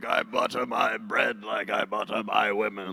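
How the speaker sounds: put-on deep, slow medieval old king voice. Retelling a joke line at a dinner: imitating an old medieval king. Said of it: "something an old medieval king would say".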